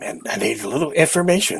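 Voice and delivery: hushed whisper. Speaking in character to a barkeep in a quiet bar: whispering in character. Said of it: "and I whisper to him".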